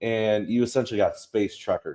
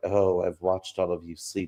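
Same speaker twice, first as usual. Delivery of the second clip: mock cold, inhuman, passive-aggressive tone, lower and quieter; 4 semitones lower, 5 dB quieter than usual. Quoting a crewmate who seems a synth: imitating a passive-aggressive, inhuman crewmate. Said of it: "very passive-aggressive".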